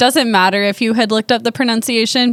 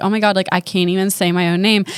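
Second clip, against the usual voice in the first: plain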